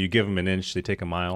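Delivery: ordinary delivery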